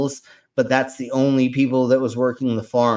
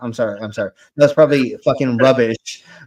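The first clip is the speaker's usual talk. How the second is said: usual speaking voice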